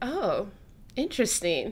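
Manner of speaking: ordinary delivery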